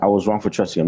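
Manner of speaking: ordinary delivery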